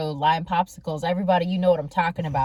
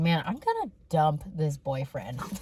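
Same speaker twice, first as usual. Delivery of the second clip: hushed mutter under the breath, half to oneself; 2 semitones lower, 5 dB quieter than usual. Retelling what Mom said during a family phone call: imitating a mutter under the breath. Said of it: "under her breath goes".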